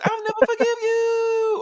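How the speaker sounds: very high, shrill, long-drawn anime scream on "you". Mocking how anime characters scream lines: imitating anime screaming. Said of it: "Screaming to the top of the lungs".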